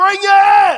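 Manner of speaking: loud shouted reply.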